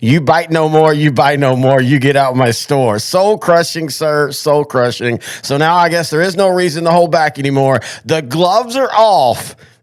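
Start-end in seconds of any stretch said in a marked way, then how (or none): 0.0-3.0 put-on stern, severe voice. Retelling what a shop owner said very sternly: imitating a stern shop owner. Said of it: "very sternly".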